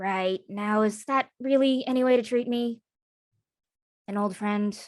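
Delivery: hushed, quiet, soft-spoken, warm tone. Voicing an elf leaning over the bar to greet an old friend: quiet voice. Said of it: "just quietly says".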